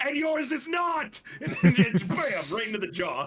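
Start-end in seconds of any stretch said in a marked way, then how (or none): 0.0-1.2 shouted, much higher pitch. A player describes Sethix's head-first charge and voices him: Sethix yelling. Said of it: "Sethix yells".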